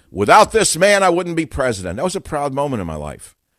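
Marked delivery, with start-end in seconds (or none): 0.2-2.0 play-acted, big, booming bellow. Recalling meeting him at Mar-a-Lago, the speaker retells how he bellowed.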